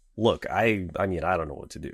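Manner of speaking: ordinary talk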